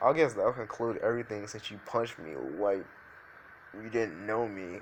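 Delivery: ordinary delivery, nothing marked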